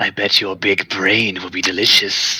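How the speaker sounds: low, soft, rasping creature voice. A game master voices a creature smiling at a player: raspy voice. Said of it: "with a more raspy voice".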